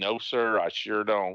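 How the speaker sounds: put-on aw-shucks manner. Retelling being stopped by a police officer, imitating own aw-shucks act. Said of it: "I try to play all shucks".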